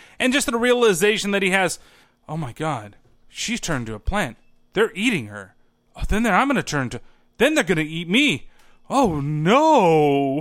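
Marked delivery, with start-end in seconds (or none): 2.3-10.4 mock deadpan, matter-of-fact delivery with audible horror. Retelling a movie character's sudden realization, imitating a deadpan delivery. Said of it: "delivered in such a deadpan way".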